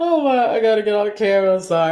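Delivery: tearful, crying voice. Speaker recalls being eight and apologizes to the audience, in tears. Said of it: "I got real tears over here".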